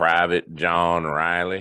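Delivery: put-on plain Southern US dialect accent. Retelling a voice heard on their device during a session, in a southern dialect. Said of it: "in a southern dialect, you hear a voice go".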